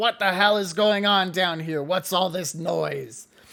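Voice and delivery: loud, giant witch character voice. Voicing the Bog Witch coming down the stairs: Bog Witch voice. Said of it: "she comes down the stairs and she says".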